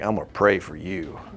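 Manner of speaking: put-on accent of the American South. Imitating how people in the south say it: southern accent. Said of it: "Or in the South".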